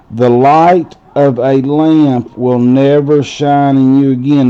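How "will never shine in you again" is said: normal talking voice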